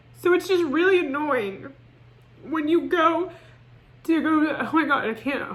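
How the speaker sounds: crying, halting and tearful, voice breaking apart. Complaining that self-care made things worse, acting out crying. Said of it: "why am I crying? Stop".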